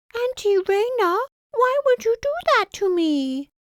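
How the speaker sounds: very high, put-on, squeaky, childlike pouting voice. Narrator addresses her aunt in a put-on high-pitched voice. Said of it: "I put on a high-pitched voice".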